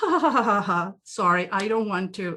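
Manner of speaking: mock nervous laughter. Imitating the other speaker's laugh from a moment ago: imitating a nervous laugh. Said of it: "that is a nervous laugh".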